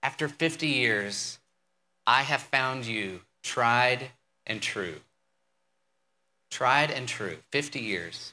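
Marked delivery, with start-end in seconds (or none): 0.0-4.9 mock earnest and sincere, very heartfelt, close to tears. Retelling a husband's speech to his wife after fifty years, imitating a heartfelt tone. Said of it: "said with a very heartfelt tone".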